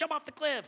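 put-on cartoon demon voice. Describing an old cartoon, voicing the demon on one shoulder: cartoon demon voice. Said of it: "do voices".

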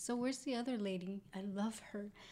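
mock-suggestive tone. The speaker retells what a man who came by said about another lady, imitating his sexual tone. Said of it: "he said it in like such like a sexual way".

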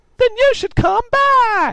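put-on drunken screaming, very high pitched. Reading a story, voicing a drunk intruder in a computer repair shop, drunk screaming. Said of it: "This guy was clearly too drunk to realize he had stumbled into a computer repair shop, ... Tallboy screamed".

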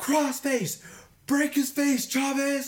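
very high, shrill, stretched, drawn-out screaming. Speaker re-enacts screaming at their brother from the stands, retelling screaming at brother. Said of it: "I'm screaming at my brother".

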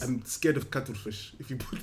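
put-on South African accent. Talking about an actor's film role, slipping into a south african accent. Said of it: "That's my South African accent".

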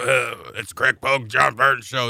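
put-on ill-sounding voice. Picturing his partner in crime coming in sick, the speaker does Greg Pogue's screwed-up voice. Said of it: "with a screwed up voice".

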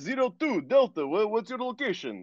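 high, slow Russian accent. Describing a video game voice job, performing a sample line in a Russian accent. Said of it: "Russian accents".

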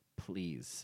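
flat, bored, uninterested, throwaway please. Answering an offer to send a list: uninterested-sounding please. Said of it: "that sounded so, like, like I wasn't interested".

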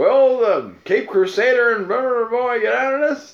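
very high, loud sixties-style TV announcer voice. After another speaker's question sounds like one, a speaker does a 1960s Batman announcer voice. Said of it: "That sounded like a 1960s Batman announcer".

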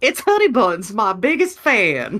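slow, sing-song put-on Southern drawl. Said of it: "she has a Southern accent".

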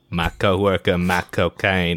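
silly, put-on, fake British accent. Asked to do the whole episode in a silly voice: silly put-on British accent. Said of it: "I'm gonna do a silly voice".

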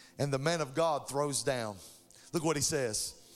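ordinary talk

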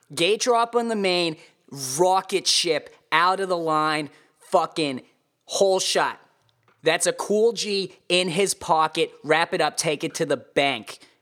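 put-on Boston accent. Starting a race report on a rider in a put-on Boston accent. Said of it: "[name]'s Boston accent race report".

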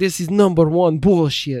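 put-on Russian accent. Imitating a fighter demanding a title fight: imitating a Russian accent. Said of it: "The Russian accent".

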